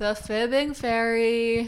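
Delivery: low energy. Introducing the co-host, low energy. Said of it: "Low energy".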